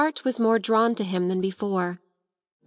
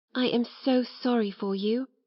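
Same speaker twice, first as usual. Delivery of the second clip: small, earnest, intense half-whispered voice; 4 dB quieter than usual. She half-whispers to someone she hopes will get well, in an intense little half-whisper. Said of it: "she would whisper in an intense little voice".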